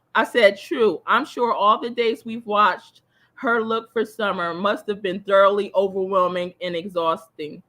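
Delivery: normal talking voice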